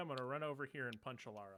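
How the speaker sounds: normal talking voice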